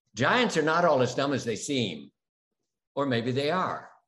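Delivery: plain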